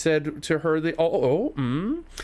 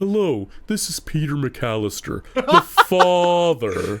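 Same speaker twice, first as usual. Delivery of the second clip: put-on tape-recorder-altered voice, louder; 5 dB louder than usual. Retelling a group chat joke about how the game character sounds: Kevin's Yak Bak voice from Home Alone 2. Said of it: "sound like Kevin booking the hotel through the Yak Bak thing".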